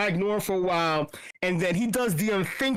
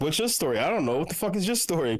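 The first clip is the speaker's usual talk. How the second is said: plain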